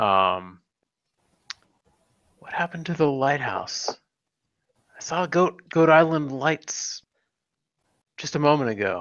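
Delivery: confiding, chummy, friendly, conspiratorial tone. Crouching down by the captain, a player's character asks him conspiratorially. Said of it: "try to conspiratorially".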